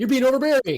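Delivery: loud shouting. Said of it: "and this is what I".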